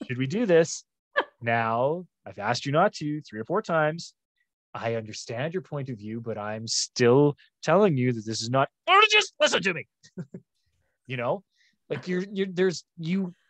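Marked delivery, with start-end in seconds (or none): 1.4-8.7 measured, even-keeled, calm, steady patience. A dad shows how he talks to Kenzie when staying calm, in a calm voice. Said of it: "This is my calm voice".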